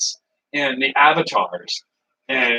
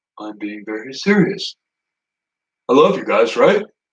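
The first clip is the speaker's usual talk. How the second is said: calm, decent, composed speaking voice; 3 semitones lower than usual. Imagining a chat member acting calm and decent: John Cena impression. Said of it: "when John Cena's all like".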